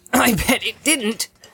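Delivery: wounded, offended, injured, pitched very high. Narrator reading, Sam insists to Frodo that the rope didn't break: Sam, in an injured voice. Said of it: "said Sam in an even more injured voice".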